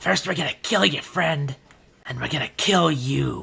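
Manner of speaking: taunting, demoralizing, threatening tone. A game narrator voices a skeleton creature taunting a character, trying to demoralize. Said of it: "tries to demoralize and says".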